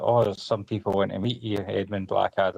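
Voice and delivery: normal talking voice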